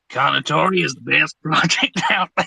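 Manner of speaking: clumsy, bad put-on American accent. Answering an audience request, saying the phrase in your best American accent. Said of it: "in your best American accent".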